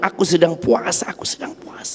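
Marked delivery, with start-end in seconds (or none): 1.1-2.0 unvoiced, much softer whisper under the breath.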